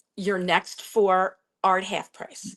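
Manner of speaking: slow, spelled-out delivery. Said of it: "I say it slowly and I say it twice".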